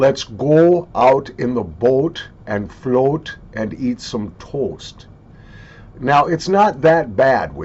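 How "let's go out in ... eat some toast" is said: heavy Minnesota accent with long O's. Explaining how Minnesotans talk, giving an example phrase in heavy Minnesota accent. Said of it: "an example of a phrase with a heavy Minnesota accent might be".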